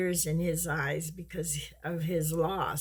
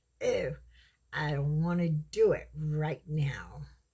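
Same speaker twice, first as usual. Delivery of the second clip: snotty, put-out, can't-be-bothered attitude. Retelling own reply after being told to do something: imitating own attitude. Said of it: "I give him the attitude".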